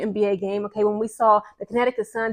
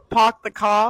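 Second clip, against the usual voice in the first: amateur attempted Boston accent. In a group taking turns at a Boston accent, attempting a Boston accent. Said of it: "I don't even know a Boston accent".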